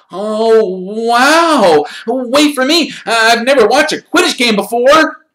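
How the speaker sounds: thrilled and excited, very high pitch, very loud. Colin calls after Harry, who is leaving for Quidditch practice, excited. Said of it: "his face shining with excitement".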